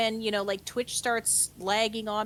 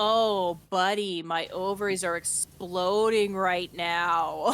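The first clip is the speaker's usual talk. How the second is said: thick, slow, mocking, dripping sarcasm; 2 semitones lower, 3 dB louder than usual. Retelling a remark to a revving driver: retelling a sarcastic remark. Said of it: "absolutely dripping in sarcasm".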